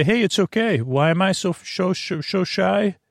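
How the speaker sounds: playful. Speaker shows another way of saying a line, said in a playful way. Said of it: "or you could say in a playful way".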